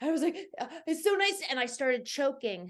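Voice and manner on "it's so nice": acted winded, puffing, breathless huffing, pitched up. Retelling running into an office after the stairs: imitating being out of breath. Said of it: "huffing and puffing".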